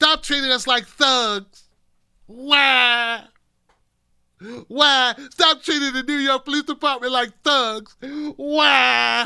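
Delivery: put-on high, loud baby-like blubbering, drawn-out "why". Describing a blubbering man, the speaker imitates him in mock crying. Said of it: "He was blubbering".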